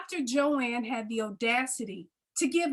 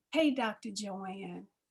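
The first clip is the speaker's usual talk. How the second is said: mock seductive voice, lower and quieter; 5 semitones lower, 7 dB quieter than usual. Reading out a flirty text sent to a doctor, put-on sexy voice. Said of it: "Get my sexy voice".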